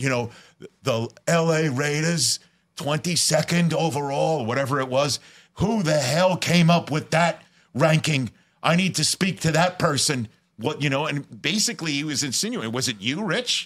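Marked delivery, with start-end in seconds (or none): 0.0-10.3 put-on big, heavy, thick Brooklyn accent. Act out the man who walked up to you about a ranking, in a put-on big, thick Brooklyn accent. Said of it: "with his big, thick Brooklyn accent".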